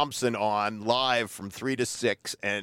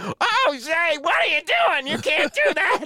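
very high, loud, stuck-pig squealing; 5 dB louder than usual. Retelling how a man protested a thrown bottle: imitating squealing like a stuck pig. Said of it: "He started squealing like a stuck pig".

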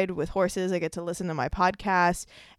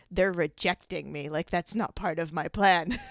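sinister, witch-like delivery. Voicing an inner reaction to a podcast guest saying no, evil witch voice. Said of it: "I sound like a evil witch or something".

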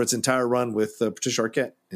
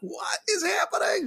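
very high, bewildered cry. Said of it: "He's like".

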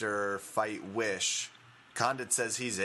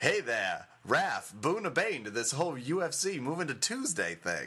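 swooping, fake country Southern twang; 4 semitones higher than usual. Joking that the news sounds like a leftover script line, in a Dukes of Hazzard accent. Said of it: "Please stop doing an accent immediately".

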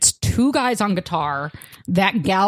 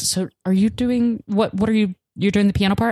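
put-on nervous, anxious-sounding voice. Retelling what a nervous girl sitting nearby asked: imitating someone speaking nervously. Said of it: "she very nervously at one point says".

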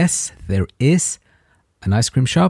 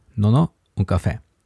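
normal talking voice

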